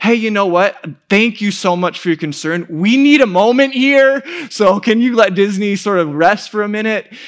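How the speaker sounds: extra-polite Minnesota manner. Retelling what they said to a woman giving a spiel at disney, put-on minnesota manner. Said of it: "in my most Minnesota way".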